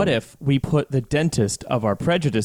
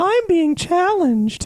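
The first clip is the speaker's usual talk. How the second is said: put-on dopey kid voice, much higher pitch; 4 dB louder than usual. Mock a guy's little monologue in a Ralph Wiggum voice. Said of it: "just like sounding Ralph Wiggum".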